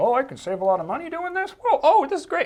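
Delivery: very high, loud, amazed and excited grandparent voice.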